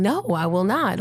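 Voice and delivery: ordinary talk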